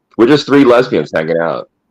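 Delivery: ordinary talk, nothing marked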